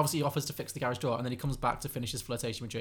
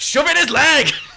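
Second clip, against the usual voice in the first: high, piercing, very loud, shrill yell; 13 semitones higher, 18 dB louder than usual. Retelling a scene where someone off camera shouts: retelling a shout. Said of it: "just shouts".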